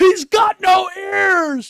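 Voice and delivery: very high, very loud, very slow, shrill, drawn-out scream. Retelling how a passenger screamed from the car: imitating someone screaming. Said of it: "the motherfucker in the back of the car screams".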